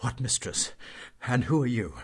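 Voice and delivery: breathless, gasping, short of air. Anatole, met by the groom Gavrilo, asks him: breathless whisper. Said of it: "Anatole asked in a breathless whisper".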